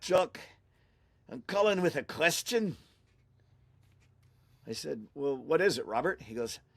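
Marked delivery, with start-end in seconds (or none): 0.0-2.8 put-on Irish-Scots accent, pitched much higher. Retelling a phone call from Robert Common, in Robert Common's Irish-Scots accent. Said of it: "he has a bit of a Irish Scot accent".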